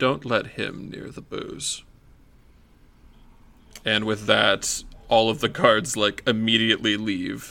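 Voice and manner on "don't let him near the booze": quiet, very hushed aside. A guard, gesturing with his head toward the Dwargar, speaks in hushed tones. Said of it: "he says this with very hushed tones".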